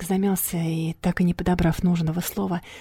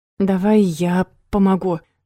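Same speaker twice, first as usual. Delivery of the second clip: ordinary delivery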